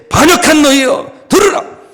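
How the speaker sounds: very high, furious, shrill, raging shout. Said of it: "막 성을 내면서 막 고래고래 소리 들으면서 이렇게 한 거고요".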